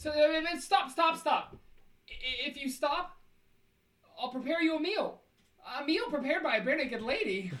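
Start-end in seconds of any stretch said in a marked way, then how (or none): 0.0-5.2 yelling, much higher and slower. After announcing they will yell at them, the speaker is yelling. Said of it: "I'm gonna yell at them".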